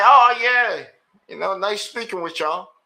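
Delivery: mock courteous, polite, kind phone manner. Retelling getting on the phone with them, acting out phone politeness. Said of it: "with all politeness and kindness".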